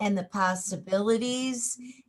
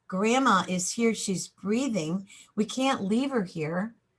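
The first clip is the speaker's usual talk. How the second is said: ordinary talk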